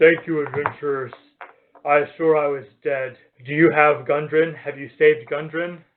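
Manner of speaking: put-on deep, low character voice. Game narrator voicing a collapsed man the adventurers approach, deep voice. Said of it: "he says with a deep voice".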